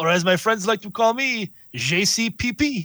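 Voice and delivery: put-on French accent. Introducing a new player character in character: French accent. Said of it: "You're gonna speak in a French accent the whole time?".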